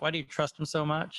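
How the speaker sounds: ordinary talk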